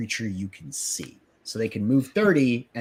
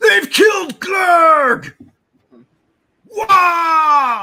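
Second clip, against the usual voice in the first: furious, tearful, very loud, high sobbing orc shriek; 12 dB louder than usual. A game master voices an orc whose clansman was just murdered: orc cry of rage and sorrow. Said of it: "This orc with rage, fury, and sorrow".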